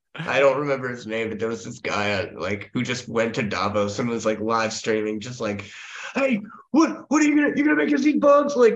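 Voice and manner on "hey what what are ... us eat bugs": mock very high, shrill, loud yell. Retelling a live streamer at Davos confronting people: imitating someone yelling. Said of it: "yelling at them".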